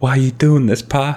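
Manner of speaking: put-on tearful young male voice, near tears. Voicing a blue son looking up at Pa, tears coming out: tearful son character. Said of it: "he looks up at you, and he's like".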